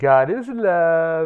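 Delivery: put-on sappy sweetness, "love" drawn out. Quoting a line about cults invented by women, in a mock-sappy voice. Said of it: "in his sappy voice".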